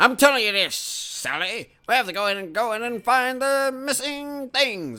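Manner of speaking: hammy vintage cartoon announcer voice. Mocking the acting style of old eighties cartoons: news reporter voice. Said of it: "They sound like fucking news reporters".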